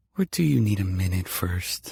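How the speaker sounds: seductive voice. Reading a romance novel aloud, a woman teasing her partner: sultry voice. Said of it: "Rachel says in that sultry voice".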